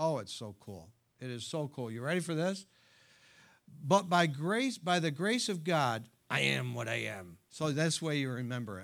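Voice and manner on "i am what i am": gruff seafaring cartoon voice. Showing off his best imitation of a remembered line, in a Popeye voice. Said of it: "That's my best imitation of Popeye".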